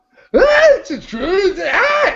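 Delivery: very high, slow, loud, wild comic yell, stretched out. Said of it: "how does he sound again?".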